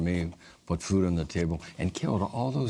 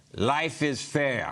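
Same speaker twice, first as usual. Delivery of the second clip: put-on pitched-up Russian accent; 7 semitones higher than usual. Speaker quoting a Russian guy who worked at the fair, Russian accent. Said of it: "How about that for a Russian accent?".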